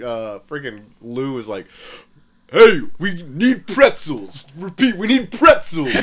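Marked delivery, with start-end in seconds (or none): 2.5-5.9 raised, pitched-up, barking cartoon cop voice. Recounting a cartoon scene, the speaker voices the other officer's line as a Lou impression. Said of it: "That's a good Lou".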